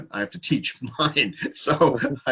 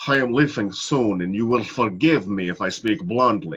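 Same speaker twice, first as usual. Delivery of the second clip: clumsy, bad put-on Russian accent; 3 semitones lower than usual. A teacher tries a russian accent for students, attempted russian accent. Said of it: "if I try to do Russian".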